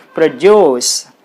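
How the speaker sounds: produce as verb, second syllable stressed. Teaching verb stress, saying produce with stress on second syllable duce. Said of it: "you put the stress mark on the second syllable".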